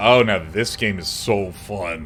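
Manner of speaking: heavy sarcasm, slow, with feigned enthusiasm and false cheer. Showing how he would sound being sarcastic about a game, sarcastic tone. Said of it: "if I was being sarcastic, I'd be like".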